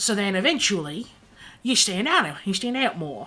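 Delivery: put-on slipping into Australian accent. Retelling what he said, the speaker turns Australian at the end. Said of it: "he turned Australian at the end".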